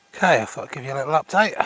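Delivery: talking slightly winded, a bit out of breath. Giving a little update right after coming up a hill, slightly out of breath. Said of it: "Sorry if I'm slightly out of breath".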